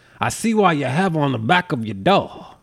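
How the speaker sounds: put-on Southern accent, laid on thick. Retelling what a grandfather said on seeing a poster: imitating a thick Southern accent. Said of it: "he had a thick Southern accent".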